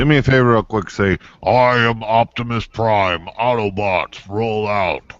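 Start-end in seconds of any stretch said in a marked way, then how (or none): 1.4-5.0 very slow speech with every word drawn out. Doing a requested line, imitating Optimus Prime. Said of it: "I've been working on that impression".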